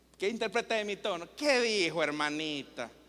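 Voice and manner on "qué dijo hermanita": very low, teasing, mocking tone. Showing a listener how tone changes meaning, mocking tone. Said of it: "me estoy burlando".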